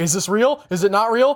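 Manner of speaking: ordinary talk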